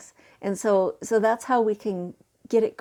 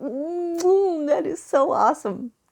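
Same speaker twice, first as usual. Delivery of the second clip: mock, high, slow, drawn-out appreciative mm; 7 semitones higher than usual. Imitating how a friend says she loves things: imitating a friend's appreciative tone. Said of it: "just the way she says it".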